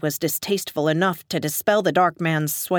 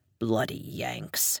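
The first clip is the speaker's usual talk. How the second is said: hushed, breathy, whispered mutter; 11 semitones lower, 9 dB quieter than usual. Turning away from the narrator in disgust, he mutters as he stalks off. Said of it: "I heard him mutter".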